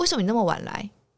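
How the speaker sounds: brash, insolent, arrogant and cocky, acted out. Retelling the child snapping at grandma for coming late: imitating arrogant talk. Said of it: "他有时候讲话很嚣张".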